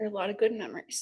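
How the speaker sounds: tearful crying voice, speaking through tears. Sharing memories of Mom with the audience, crying while speaking. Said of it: "even though I'm crying".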